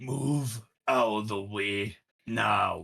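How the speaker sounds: firm, authoritative, commanding voice. Player character ordering a crowd blocking the tavern, in a commanding voice. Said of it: "with a very commanding voice".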